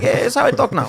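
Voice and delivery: put-on Russian accent. Imagining the reply of a caller from russia, in a russian accent. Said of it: "with a Russian accent".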